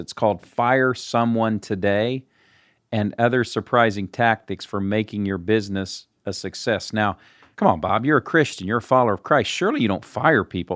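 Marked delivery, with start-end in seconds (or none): 7.6-10.8 ironic, tongue-in-cheek, heavily sarcastic tone. Asking a guest about his book on firing people, sarcastic tone. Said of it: "there's sarcasm, so forgive me".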